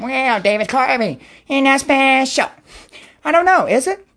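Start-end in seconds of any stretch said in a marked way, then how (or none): 0.0-2.5 judgmental, pious, disapproving tone. The speaker shows off the character he can do: a Church Lady impression. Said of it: "I can do Church Lady for you".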